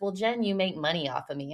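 teasing, tongue-in-cheek, flippant, facetious tone. Speaker retells what her therapist told her, imitating a facetious remark. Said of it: "like very facetiously".

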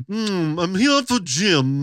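put-on upper-class accent. Imitating a guy's old parents walking in, posh Connecticut accent. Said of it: "they talked like those like, Connecticut".

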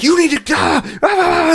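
very high, stammering, drawn-out yell. Retelling how the guy on the train yelled about a foot on the seat: imitating a guy yelling. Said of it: "just yelling".

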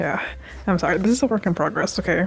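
normal talking voice

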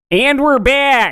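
high caricatured Chicago accent, drawn-out 'back'. Saying their usual comeback line, in a Chicago accent. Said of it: "that was "and we're back" with a Chicago accent".

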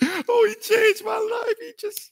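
mock tearful crying. Picturing people at a future funeral: imitating mourners crying. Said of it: "all the people gonna be there crying, like".

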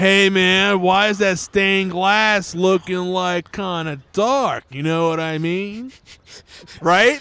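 classic Florida accent, slow and drawn out. Asked by another speaker to switch accents: classic Florida accent. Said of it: "do a classic Florida accent".

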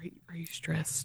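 low-pitched voice. Speaker re-enacts a question from a normal conversation, in a lower voice. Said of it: "in lower voice".

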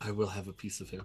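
whispering under breath. In a game, a player says their character's line, whispering under breath. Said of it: "I will whisper under my breath".

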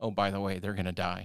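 ordinary delivery

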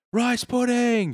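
mock very high, loud, shrill yell. Retelling a movie scene where the wife yells from a window: imitating someone yelling. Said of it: "she yells out from a window".

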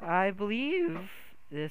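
voice cracking up high in mid-phrase. A character answers the last question about a weapon, voice crack. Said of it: "Whoops, that was a voice crack".

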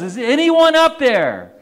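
loud, high-pitched yell. Telling the story of a man hanging from a cliff branch, imitating a yell. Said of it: "And he yells".

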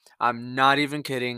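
ordinary talk

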